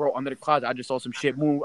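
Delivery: ordinary delivery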